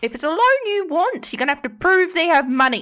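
very high, very loud, shrill gnome voice. Voicing a gnome in a scene with others, in a gnome voice. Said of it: "Let me do a gnome voice".

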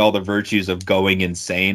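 ordinary talk, nothing marked

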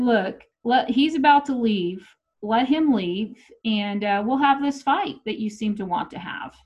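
ordinary delivery

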